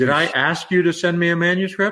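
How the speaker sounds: curt, high, dismissive tone. Retelling a literary agent's reply on the phone: imitating a dismissive tone. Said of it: "he said it in that tone".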